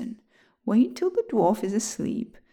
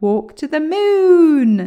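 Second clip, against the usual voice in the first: booming, very loud, drawn-out cry of excitement; 7 semitones higher, 10 dB louder than usual. Reading a story, William shouts in excitement at the angry dwarf. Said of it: "shouted William in excitement".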